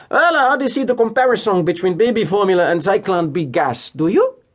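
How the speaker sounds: put-on Havana-tinged accent. Retelling what Kroner said across the war room table: Kroner's Havana-esque accent. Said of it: "in his Havana-esque accent".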